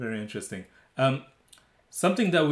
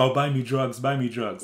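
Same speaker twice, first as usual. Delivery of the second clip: usual speaking voice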